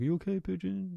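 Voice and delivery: high, creaky, soothing voice. Retelling checking on a pigeon stuck against the window: retelling a pigeon-calming voice. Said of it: "is that your voice you use to calm pigeons?".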